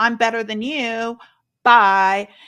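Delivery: mocking, sarcastic and loud. Imitating people in Facebook groups: imitating a sarcastic commenter. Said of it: "it's the sarcasm that really kinda pisses".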